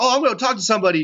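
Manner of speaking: acted-out angry tone. Retelling how a man reacted on hearing he wasn't drafted: retelling an angry reaction. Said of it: "he got all pissed off".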